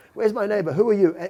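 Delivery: put-on nasal New Jersey accent. Recounting a scary encounter, quoting a man who demanded his neighbor, nasal new jersey accent. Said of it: "New Jersey nasal, a nasal sort of uh, East Coast accent".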